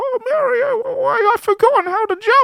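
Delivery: put-on very high-pitched voice with British accent. Retelling what Toad says in the game's story mode: Toad with a British accent. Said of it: "He's British in this game".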